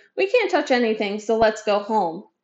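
ordinary delivery

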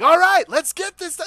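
very high, very loud top-of-the-lungs shout. Recalling a man's first words on coming upstairs, imitating Ruko yelling. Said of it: "Like just yelling out the top of his lungs".

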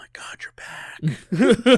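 nonchalant, breathless aside. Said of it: "nonchalantly making".

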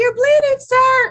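piercing, very high, loud yell. Retelling what the speaker yelled at a bleeding man on a bike: retelling a yell. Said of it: "I yelled at him like".

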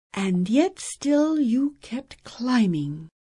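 murmured, turned inward. Reading a story aloud, voicing one character's reply to another, murmured. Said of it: "Jastra murmured".

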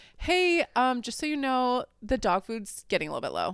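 mock carefully gentle, light, sing-song, careful phrasing. Retelling how she thought she phrased a reminder: imitating her own gentle phrasing. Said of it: "this is how I thought I said it".

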